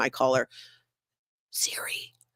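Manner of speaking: hushed voice. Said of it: "which I have to whisper".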